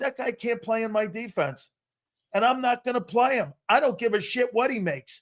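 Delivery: ordinary delivery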